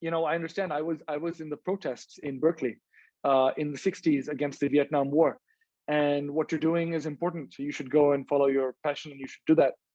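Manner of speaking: ordinary talk, nothing marked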